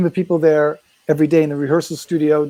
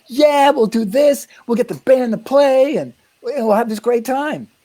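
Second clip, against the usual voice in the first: mock eager, bubbling, high excited kid voice; 9 semitones higher than usual. Retelling pitching a plan with a bluegrass band to Bill, retelling an excited kid. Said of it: "I was like this excited kid".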